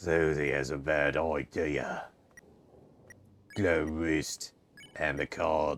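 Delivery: heavy, worn, raspy voice. Reading a line aloud, trying a voice never done before, heavy-smoker voice. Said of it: "How many packs of cigarettes a day".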